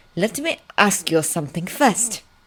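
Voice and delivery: plain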